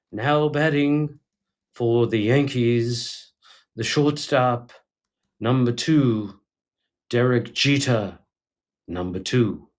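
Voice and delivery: slow, drawn-out ballpark announcer, every word stretched. Doing the worst impersonation of a ballpark announcer: Bob Shepard impression. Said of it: "This is my Bob Shepard".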